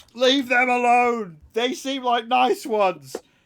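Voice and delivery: very high, shrill, loud war cry. A game master voicing a raider swinging a tire iron, yelling out. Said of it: "just yells out".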